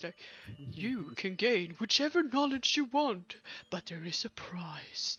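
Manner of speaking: eerie, very deep, low, spooky put-on voice. Retelling what a librarian-like figure told them about gaining knowledge, in a spooky voice. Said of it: "he said this with a really spooky voice".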